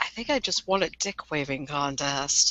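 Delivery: soft, hushed half-whisper, spoken aside. Retelling what a man half-whispered over to someone, retelling a half-whisper. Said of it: "he like whispers over to Elias".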